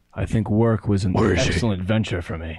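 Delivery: fake, mock-serious, deep businesslike voice. Among friends agreeing to be professional, talking in a put-on deep voice. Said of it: "with my deep voice initiated".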